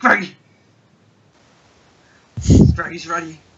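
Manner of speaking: hyped scratchy voice. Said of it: "hype and scratchy voice".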